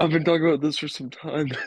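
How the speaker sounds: high, mocking, teasing, ribbing send-up voice. Teasing another speaker by repeating their words back: mocking imitation of them. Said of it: "You're like".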